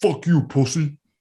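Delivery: blunt, crude, quickly fired-off delivery. Retelling a video's impression of Mad Bum swearing: Mad Bum impression. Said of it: "a solid impression of Mad Bum".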